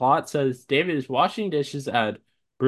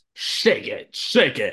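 put-on announcer voice, higher pitched; 5 semitones higher than usual. Prompted by the other speaker to say a typed line, the speaker delivers it: announcer voice. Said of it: "Is there anything you would like me to say in an announcer voice?".

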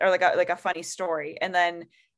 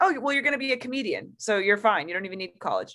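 breezy, offhand, completely confident nonchalance; 3 semitones higher than usual. Retelling a friend's reply in his car: imitating confident nonchalant tone. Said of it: "so confidently and, like, very nonchalantly".

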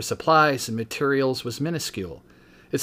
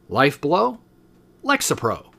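TV commercial announcer voice with swooping pitch. Pitching an imagined lexapro commercial to the camera, in your best broadcaster voice. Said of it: "saying in my best broadcaster voice".

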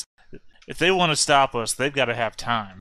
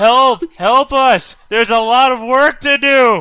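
full-volume screaming, very high, loud and piercing; 12 semitones higher, 12 dB louder than usual. In a role-play game, a player's character in the cargo bay starts yelling for help. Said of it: "start yelling".

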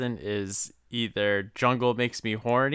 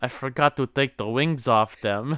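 normal talking voice

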